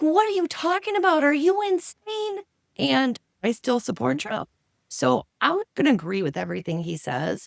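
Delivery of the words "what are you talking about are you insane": put-on very high, shrill screaming outburst. Retelling a reaction to a speech on TV: imitating own screaming at the TV. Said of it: "I'm screaming at the T V".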